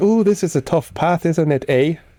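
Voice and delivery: clumsy put-on Canadian accent. Imagining what she might have said, in a bad put-on canadian accent. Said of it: "I can't do Canadian".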